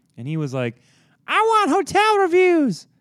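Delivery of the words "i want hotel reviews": weird, shrill voice, very high and very loud. Retelling what the intern said: imitating Jonathan's odd voice. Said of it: "why do you sound like that".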